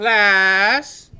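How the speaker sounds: projected call-out.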